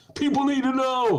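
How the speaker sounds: mock shrill, very high, fired-up rousing yell. Mocking senators' fiery speeches before the insurrection: imitating senators yelling. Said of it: "They're all fired up and yelling".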